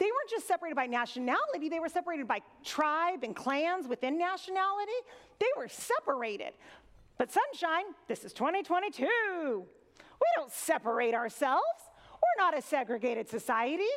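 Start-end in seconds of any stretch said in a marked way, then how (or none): 7.2-13.9 heavy sarcasm, laid on thick. Voicing a self-assured churchgoer's view on segregation: put-on heavy sarcasm. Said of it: "dripping with sarcasm".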